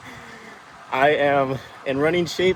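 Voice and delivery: out of breath, loud and high-pitched talking.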